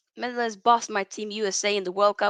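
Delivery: ordinary delivery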